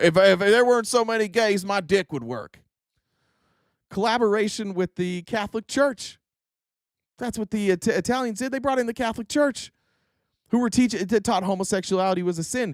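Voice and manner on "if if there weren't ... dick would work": exaggerated Texas-accented man. Imitating every conservative man in Texas, Texas conservative man impression. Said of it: "Every conservative man in Texas".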